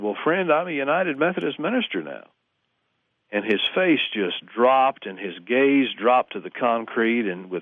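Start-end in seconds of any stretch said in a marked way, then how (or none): 0.0-2.3 glad, delighted tone full of pride. Retelling his own reply to the fan: retelling his own proud reply. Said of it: "with delight and pride".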